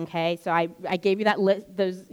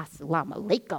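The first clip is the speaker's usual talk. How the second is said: play-acted sneering, scornful, mocking tone; 3 semitones lower than usual. Retelling how a passerby greeted the hijab-wearing visitors, imitating a sneering greeting. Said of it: "and just kind of sneered at them".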